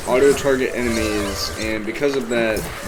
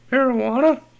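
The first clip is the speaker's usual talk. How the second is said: voice breaks very high mid-word on marijuana; 12 semitones higher than usual. Retelling how the word came out: imitating own voice crack. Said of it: "but my voice is like".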